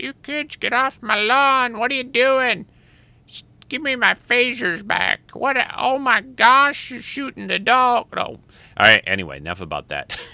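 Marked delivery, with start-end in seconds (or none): 0.0-8.2 put-on very high-pitched, old-mannish voice. Announcing a familiar voice bit, then doing it: Grandpa Rico voice. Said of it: "my old Rico, Grandpa Rico voice".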